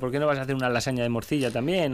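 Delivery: ordinary delivery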